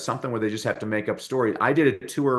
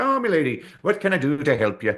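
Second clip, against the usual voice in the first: put-on affable, friendly Irish accent, pitched up; 5 semitones higher, 3 dB louder than usual. Retelling his mom's Ireland tour, the speaker voices the bus driver, imitating an affable Irishman. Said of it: "was the most affable Irishman".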